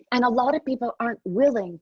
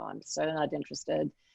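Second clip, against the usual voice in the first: bored, checked-out, creaky vocal fry; 7 semitones lower, 10 dB quieter than usual. Imitating the vocal fry habit of millennials: imitating vocal fry. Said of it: "a common affectation that is vocal fry".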